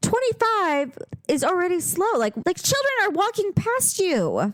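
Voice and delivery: shouted, screaming voice. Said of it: "I was screaming".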